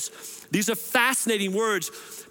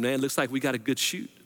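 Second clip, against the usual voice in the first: put-on whisper, lower; 7 semitones lower than usual. Retelling a skydiving instructor's words during the jump: imitating a whisper. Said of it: "So he whispers, like".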